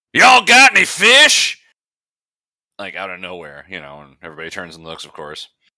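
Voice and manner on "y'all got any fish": sudden, very loud, very high, booming, drawn-out yell. Retelling a man at a bar yelling out of nowhere, imitating a loud yell. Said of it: "and he yells like loudly".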